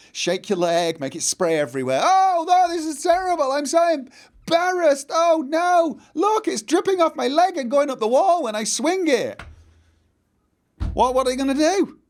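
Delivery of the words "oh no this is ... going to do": very high, loud, noisy put-on embarrassed distress. Acting out peeing in a shop on purpose: loud put-on distress. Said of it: "Make a lot of noise".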